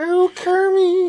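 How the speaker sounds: put-on, very nasal, high and loud character voice. Showing how a character's voice sounds: nasal Miss Piggy voice. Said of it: "way na-, nasally and stuff".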